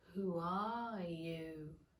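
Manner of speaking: drowsy, languid, sleepy voice, low and soft. Reading the story aloud, the narrator voices the caterpillar: languid, sleepy voice. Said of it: "addressed her in a languid, sleepy voice".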